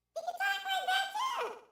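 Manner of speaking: very high, squeaky little chipmunk chatter. Showing a caller the voice options: chipmunk voice. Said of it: "if you wanna talk like a chipmunk".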